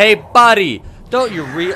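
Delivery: slow, very high, drawn-out yell. Retelling how viewers must have shouted a warning: imitating viewers yelling. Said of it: "yelling at me".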